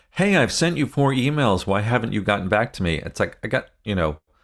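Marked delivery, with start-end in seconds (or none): none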